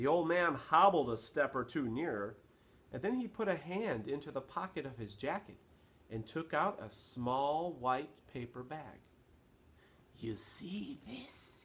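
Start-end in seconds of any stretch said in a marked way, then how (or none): 10.2-11.6 soft, breathy, hushed whisper. Reading a story, an old man shows someone a small bag, whispering. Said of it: "he whispered".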